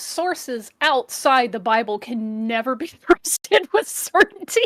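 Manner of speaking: slow reading aloud, fighting back laughs. Reading a passage aloud while trying not to laugh: laughing while reading. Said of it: "I'm gonna keep trying to do this without laughing".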